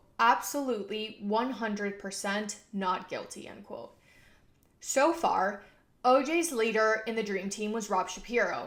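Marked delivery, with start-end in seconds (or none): none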